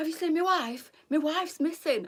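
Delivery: put-on shrill holler, very high, full volume. Retelling a shopping trip, the speaker quotes a man asking about his wife, imitating loud shouting. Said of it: "shouting as loud as can be".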